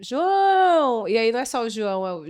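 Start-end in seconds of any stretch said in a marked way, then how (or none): 0.0-1.1 high-pitched shout, stretched long and drawn out. Showing how someone in a captioned film shouts a name: shouting a name. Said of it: "alguém grita".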